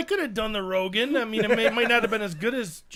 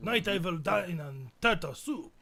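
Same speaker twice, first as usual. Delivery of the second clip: put-on German accent, lower pitch; 4 semitones lower, 10 dB quieter than usual. Trying a requested character impression, German accent. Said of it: "That was German".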